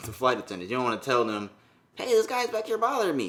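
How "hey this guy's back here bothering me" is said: very high put-on imitation voice. Imagining telling flight attendants about being harassed: Mike Tyson voice. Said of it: "in Mike voice".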